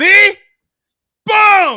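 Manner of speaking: high, loud, booming, triumphant shout.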